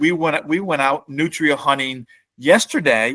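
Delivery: ordinary delivery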